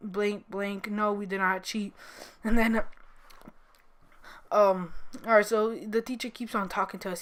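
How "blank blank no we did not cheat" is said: plain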